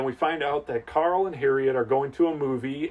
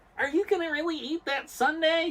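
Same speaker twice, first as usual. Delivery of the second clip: very high, squeaky, nasal nerd voice; 14 semitones higher, 4 dB quieter than usual. Coached to do better, the speaker retries the line in a nasal Urkel voice. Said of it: "you got to get the nasaliness going".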